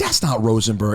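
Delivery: ordinary talk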